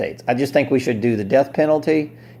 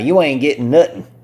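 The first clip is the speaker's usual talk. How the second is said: Southern US male accent; 3 dB louder than usual. Addressing sheriffs during a rant, in a Southern US accent. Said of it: "I'm going to speak like a Southern guy".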